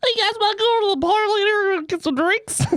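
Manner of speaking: tiniest, very high, little squeaking mouse voice. Retelling how a six-foot guy invited friends to the bar, in a tiny mouse-like voice. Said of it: "he had a voice like the little mouse".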